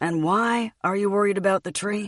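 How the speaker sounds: patronizing, condescending, superior talking-down tone. He asks the narrator, who is pointing at a tree, in a patronizing voice. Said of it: "He asks me in a patronizing voice".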